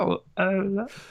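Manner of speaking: put-on whiny footballer voice. Imitating a footballer after years of headers: whiny nasal Harry Kane voice. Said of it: "Did their nasal cavities just collapse?".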